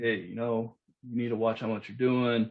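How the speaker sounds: normal talking voice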